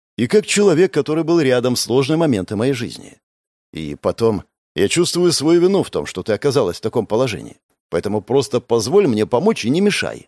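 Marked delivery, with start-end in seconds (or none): none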